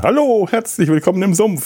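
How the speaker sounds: put-on, extra-cheerful, very high voice. Welcoming listeners to the Sumpf with an extra-cheerful greeting. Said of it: "mit besonders fröhlichem".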